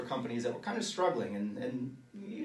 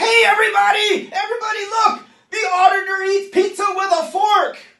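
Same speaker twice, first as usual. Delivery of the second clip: very loud, very high, shrill top-of-the-lungs scream; 17 dB louder than usual. An auditor retelling how a man mocked their fork in public, retelling a scream. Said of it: "he screams at the top of his lungs".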